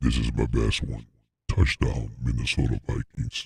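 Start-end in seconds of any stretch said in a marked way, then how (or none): 1.5-3.5 robotic voice, much lower. Speaker trying out voices on a touchdown call, Optimus Prime voice. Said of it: "I sound like Optimus Prime".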